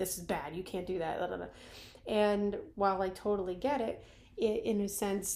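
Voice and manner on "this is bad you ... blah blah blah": normal talking voice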